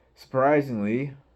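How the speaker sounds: high, loud drawl dripping with sarcasm on "surprisingly".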